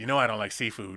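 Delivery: very low, snippy voice full of attitude. Retelling a couple choosing food, the speaker mimics the woman's snippy attitude. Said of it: "she says it with an attitude too".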